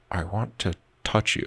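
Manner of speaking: assumed eerie voice, very soft. Recalling a film where Stanley Tucci plays a creepy guy: Stanley Tucci creepy-guy voice. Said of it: "plays kind of a little creepy guy".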